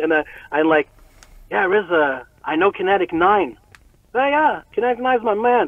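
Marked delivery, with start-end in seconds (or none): 1.5-5.7 nervous nerd voice, pitched up, gushing out. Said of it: "I'm all nervous, like a fucking nerd".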